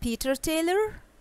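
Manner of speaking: question-like rise at the end of Taylor. Introducing oneself as a question, with rising intonation on Taylor. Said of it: "see the rising intonation?".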